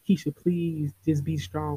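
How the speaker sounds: mock tearful pleading voice. Speaker retells what a man said to her while he cried, imitating someone crying. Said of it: "He started crying".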